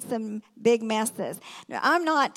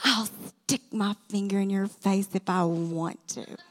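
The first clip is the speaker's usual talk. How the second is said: put-on tense speech through gritted teeth; 4 semitones lower than usual. Quoting a man who stuck a finger in his face, through gritted teeth. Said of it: "he gritted his teeth".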